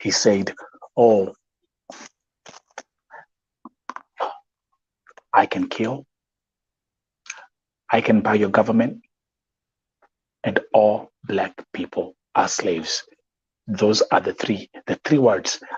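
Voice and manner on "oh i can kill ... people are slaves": halting, very broken, ungrammatical, ugly English. Retelling the words of the man who killed a young woman: imitating very broken, ugly English. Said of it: "very broken, ugly English that he was speaking".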